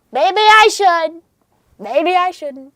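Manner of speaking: high, loud helium voice, like inhaled balloon gas. Redoing the line as a joke: Donald Trump if he had helium. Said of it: "Donald Trump if he had helium".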